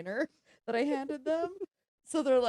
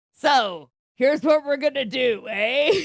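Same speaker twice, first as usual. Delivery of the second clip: mock Boston accent, louder; 3 semitones higher, 8 dB louder than usual. Talking about call-center employees who faked Boston accents, doing a mock Boston accent. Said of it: "That's very good, [name]".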